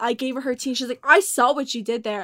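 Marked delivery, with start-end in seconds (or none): 1.0-2.2 mock raging, louder. Retelling what a woman said after catching the speaker mimicking her, mock-raging. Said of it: "And she started raging".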